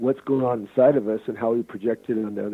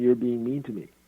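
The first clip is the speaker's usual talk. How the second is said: play-acted harsh, accusing, blaming tone. Acting out an argument example, imitating a harsh tone. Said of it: "and I say in a harsh tone".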